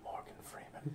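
very soft, quiet whisper.

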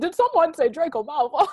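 fake British accent. Asked to repeat a line with an accent, saying it in a bad British accent. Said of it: "What did you do with like an accent?".

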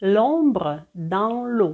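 slow, careful reading with French pronunciation.

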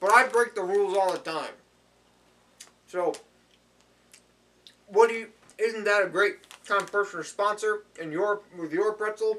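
speaking with mouth full of food. Speaker eating pretzels before a sponsor read, talking with mouth full. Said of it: "never talk with my mouth full".

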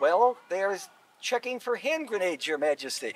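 ordinary delivery

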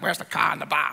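low-pitched Boston accent on every word. Explaining how accents show where people are from, boston accent. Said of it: "Someone sounds like".

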